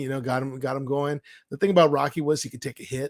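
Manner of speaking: plain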